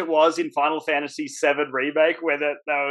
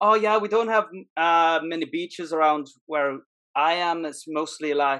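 put-on Irish accent; 4 dB quieter than usual. Retelling what they told someone they had just met: fake irish accent. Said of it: "I'm gonna go with like an Irish accent".

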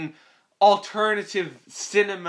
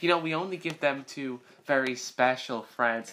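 mock creepy tone, lower and quieter; 5 semitones lower, 5 dB quieter than usual. Acting out a movie scene where fruits are offered: imitating a creepy voice. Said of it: "this is so fucking creepy".

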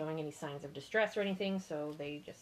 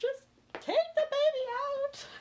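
very high, loud, put-on sobbing bawl; 5 dB louder than usual. Recounting her labor, retelling how she bawled. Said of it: "and I'm bawling".

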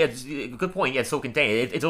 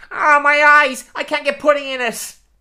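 shrill, booming cartoon voice, very high and loud; 14 semitones higher, 8 dB louder than usual. Hosting a game where a guest guesses the fake quote, the speaker gives one: Lenny impression. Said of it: "my impression this week is Lenny".

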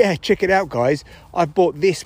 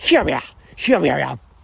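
creaky, rasping voice. Showing the voice people put on to call dogs: dog-calling voice. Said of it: "It's either like".

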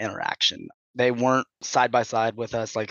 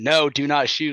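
put-on yelling; 4 semitones higher, 4 dB louder than usual. Retelling how the XO yelled from behind; imitating someone yelling. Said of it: "starts yelling like".

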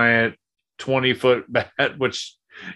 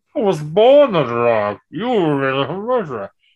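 muffled, masked-sounding voice, pitched higher; 5 semitones higher, 4 dB louder than usual. Acting out a movie line in conversation: muffled Bane voice. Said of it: "Sound like Kenny from South Park".

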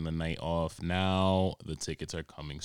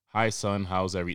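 raised, very formal, put-on delivery; 5 dB louder than usual. Retelling texts from mom, imitating her: very formal tone. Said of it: "very formal, my mom through text".

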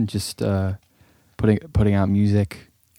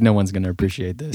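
ordinary talk

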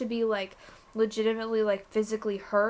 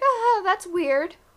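high-pitched, slow, dismissive laughing brush-off. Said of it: "kinda laugh it off and be like".

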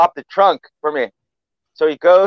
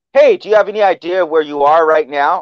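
put-on mock-sarcastic tone. Retelling a joke where a police officer pulls a driver over, imitating a sarcastic tone. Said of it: "he's to ask him in a sarcastic way".

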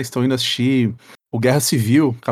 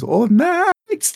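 mock shouting in a much higher voice; 12 semitones higher than usual. Describing a man who shouts at people's house gates, retelling his shout.

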